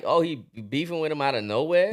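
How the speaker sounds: ordinary delivery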